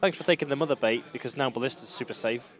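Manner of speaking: plain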